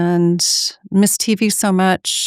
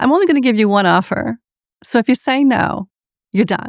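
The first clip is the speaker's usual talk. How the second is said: put-on slight hint of an East Coast accent; 4 semitones higher than usual. Retelling how Donna called her out of the blue, doing Donna's East Coast twinge. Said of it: "with like this kind of East Coast twinge".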